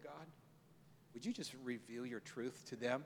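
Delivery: very quiet, gentle, hushed prayerful voice. Retelling how his wife prayed for two people: imitating a soft prayer. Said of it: "in a real soft way".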